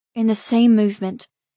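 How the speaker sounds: ordinary delivery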